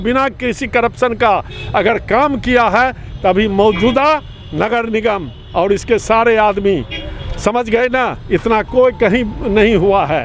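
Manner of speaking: ordinary talk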